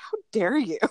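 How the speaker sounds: offended, indignant grumbling mutter. Retelling what a two-year-old said after being told to be quiet: imitating June muttering. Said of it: "kind of muttering".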